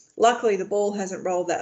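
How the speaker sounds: ordinary delivery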